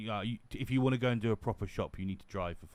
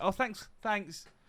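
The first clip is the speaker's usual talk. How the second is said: very high-pitched, snide, sarcastic chirp; 10 semitones higher than usual. Retelling what was said to a staring shop worker: imitating own sarcastic thanks. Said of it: "I make a sarcastic".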